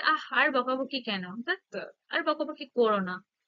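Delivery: ordinary delivery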